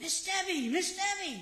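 high, loud hollering yell. Retelling a former student calling out from a ladder in a store: imitating someone yelling. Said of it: "He's yelling".

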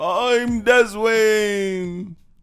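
very high, jolly, festive voice. Co-host giving their name at the show's opening, in Santa voice. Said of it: "That's my Santa voice".

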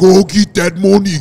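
put-on Nigerian accent. Friends trying out accents, imitating how Nigerians talk: Nigerian accent. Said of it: "the Nigerians be like".

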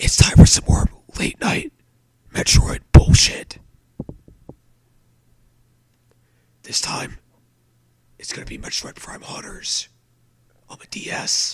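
quiet awkward whispering. Greeting viewers late at night while a roommate sleeps, whispering awkwardly. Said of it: "whispering really stupidly and awkwardly".

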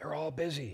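put-on small child's hushed, high little-boy half-whisper. Telling a joke, voicing a little boy on the phone: imitating a half-whispering little boy. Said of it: "still whispering".

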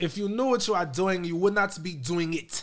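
bad put-on British accent. Joking about their own terrible british accent: bad british accent. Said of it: "My British accent is terrible. Right, my British".

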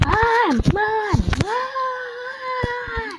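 shouting. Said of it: "hear [name] going".

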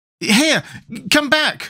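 fearful, frightened cry, very high pitched. Tip, clinging to the chimney as the thing rises into the air, frightened cry. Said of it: "cried Tip in a frightened voice".

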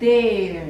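there stressed and drawn out.

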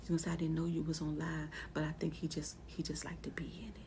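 speaking in a whisper. On a live stream with the husband nearby, whispering. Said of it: "I'm whispering again like I was yesterday".

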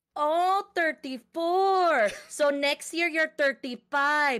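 put-on Filipino-accented English, switched on, put on. Retelling a woman's reply after asking the speaker's age; Filipino accent. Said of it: "Filipino accent got activated".

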